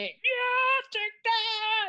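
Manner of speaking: very high, loud, wild, incoherent yelling. Voicing a character who doesn't like fighting: screaming incoherently. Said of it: "screaming incoherently".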